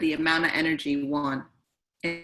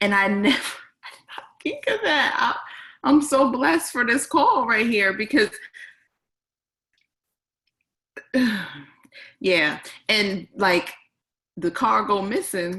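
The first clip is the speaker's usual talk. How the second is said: half laughing, half crying, pitched up; 6 semitones higher, 3 dB louder than usual. Reacting on a call to a point that moved them: laughing through tears. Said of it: "laughing, but I'm in tears".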